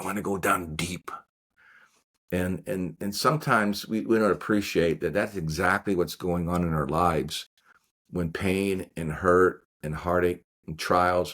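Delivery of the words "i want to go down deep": put-on heavy, laid-on, really strong Italian accent. Retelling a former priest's words about his conversion: strong Italian accent. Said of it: "in this really strong Italian accent".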